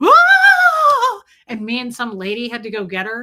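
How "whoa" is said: high, loud, startled wail. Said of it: "she was like".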